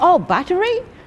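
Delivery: high, loud voice full of surprise.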